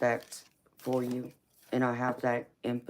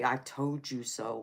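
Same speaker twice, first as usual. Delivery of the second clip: stern, weighty, strong, firm, deep, slow fatherly voice. Speaker recalls their father pointing a finger at them; imitating dad's strong, firm, deep voice. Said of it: "in his strong, firm, deep voice".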